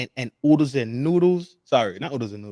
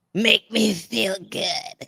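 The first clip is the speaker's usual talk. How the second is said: put-on girly voice, high and a touch creaky; 8 semitones higher than usual. Retrying the imitation of what she said, a little bit more girly. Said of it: "It's a little bit more girly".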